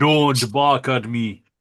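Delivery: very slow, deliberate delivery, each word separate. Told to make a line to a barking dog sound like Arnie: Arnold Schwarzenegger impression. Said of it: "make it sound like Arnie".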